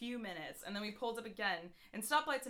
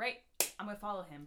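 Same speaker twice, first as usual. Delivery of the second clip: usual speaking voice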